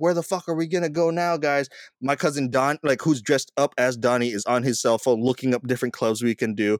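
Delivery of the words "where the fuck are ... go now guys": put-on, fed-up, mad, exasperated outburst. Retelling yelling at his costumed cousins while looking for a club: retelling a mad yell. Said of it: "I'm getting really mad. I'm like".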